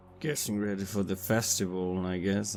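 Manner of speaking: low, soft mumble under the breath. Answering a stranger in a silent tavern, mumbling under breath. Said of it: "I mumble under my breath".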